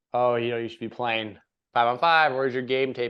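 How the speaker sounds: normal talking voice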